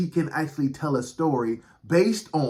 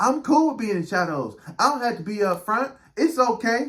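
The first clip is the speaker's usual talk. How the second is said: voice lifted up high, pitched-up; 8 semitones higher than usual. Voicing what some listeners are saying, in a high-pitched voice. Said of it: "you notice how my voice went up".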